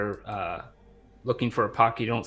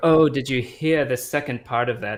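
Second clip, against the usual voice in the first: obvious fake posh accent, louder; 2 semitones higher, 5 dB louder than usual. Voicing a theater-goer chatting loudly to a friend: obvious fake posh accent. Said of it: "in an obvious fake accent".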